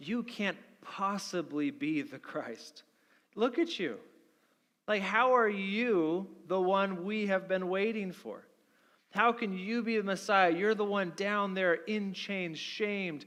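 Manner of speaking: sneering, scornful, near-sarcastic, with "you" stretched. The speaker acts out the high priest questioning a condemned prisoner: mock almost-sarcastic question. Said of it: "asks almost sarcastically".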